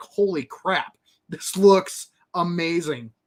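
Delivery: ordinary delivery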